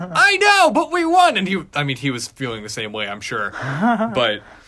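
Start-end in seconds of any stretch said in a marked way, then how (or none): 0.0-1.4 mock scream, higher, louder. Retelling calling their dad right after the game was won: retelling a scream. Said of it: "screamed at him".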